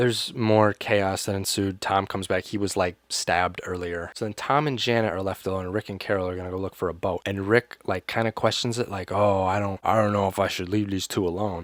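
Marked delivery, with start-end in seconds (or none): 9.1-11.6 put-on bored, flat, monotone delivery. Recapping a show episode, mocking how Rick delivered his line: imitating Rick's bored flat line. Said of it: "says it in the most boring".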